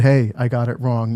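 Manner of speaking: ordinary talk, nothing marked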